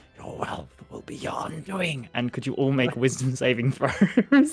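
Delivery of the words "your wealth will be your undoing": quiet whisper, under the breath. Game master voices Harine as her scales glow and coins ripple: Harine's whisper. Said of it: "she whispers out".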